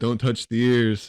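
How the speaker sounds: slow, drawn-out yell through a megaphone. Retelling a funny scene, imitating Haruko yelling through a megaphone. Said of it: "she's got, like, a megaphone".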